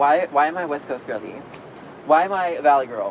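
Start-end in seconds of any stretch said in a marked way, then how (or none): none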